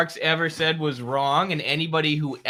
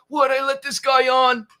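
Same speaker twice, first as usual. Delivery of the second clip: slow, drawn-out, raised, very high panicked voice; 9 semitones higher, 5 dB louder than usual. Retelling a TV host losing control of an interview: imitating Stuart Varney panicking. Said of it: "having a panic attack".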